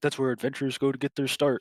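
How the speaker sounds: put-on, derisive, belittling, mocking tone. Retelling what a man said: mockingly retelling his words. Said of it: "like mockingly. He's like".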